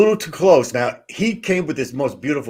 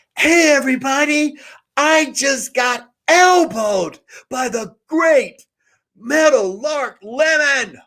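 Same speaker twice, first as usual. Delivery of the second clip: put-on, very high, shouted yell; 14 semitones higher than usual. Retelling how the speaker yelled out to everybody after being elbowed; retelling a yell. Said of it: "And I just yelled out".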